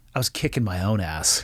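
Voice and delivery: mock dry, matter-of-fact, dead straight delivery. Retelling a man's answer to a guard at the Davis-Monthan gate, imitating a deadpan reply.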